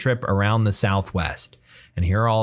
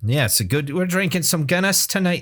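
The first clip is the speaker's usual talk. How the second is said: very high-pitched put-on Scottish accent; 9 semitones higher than usual. Chatting with another speaker, put on a Scottish accent. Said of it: "That's a Scottish accent".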